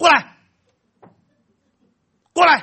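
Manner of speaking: put-on explosive, furious shout, very loud and high. A father recounts losing his temper at his son, retelling an angry shout. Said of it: "瞬间那个火就整个冒上来了".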